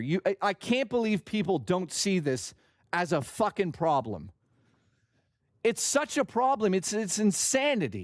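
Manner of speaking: seething, furious, heated outburst, completely worked up. Ranting to listeners, very angry. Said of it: "I'm so fucking mad".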